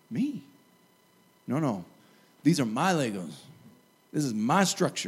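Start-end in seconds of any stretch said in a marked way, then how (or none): 1.5-5.1 sudden, put-on Southern accent, slipped into. Acting out someone insisting the Legos are theirs: put-on Southern accent. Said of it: "I'm going Southern all of a sudden".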